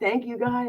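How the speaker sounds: mock sarcastic, high-pitched voice. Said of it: "how I talk sarcastically and do that".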